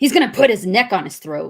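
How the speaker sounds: put-on, slightly irritated tone of voice. Asked to say the line in a Ryan voice, attempting a failed Ryan voice, put-on irritation. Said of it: "just sounded slightly irritated".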